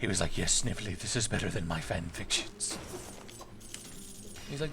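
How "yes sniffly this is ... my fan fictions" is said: low, blissed-out cartoon villain voice. Imitating Robotnik talking to his sidekick about fan fiction: Jim Cummings Robotnik voice. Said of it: "I like how Jim Cummings Robotnik on Sad A M".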